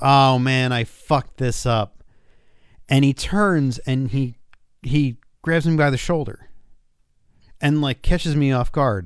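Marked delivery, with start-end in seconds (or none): 0.0-2.0 put-on loud exclamation, slower. Retelling a man who botched signing a Scream mask, retelling a loud exclamation. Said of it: "he says very loudly".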